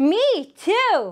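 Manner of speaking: shouted loudly at a high pitch. Playing a repeat-after-me game with a learner: shouting. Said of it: "and I will shout".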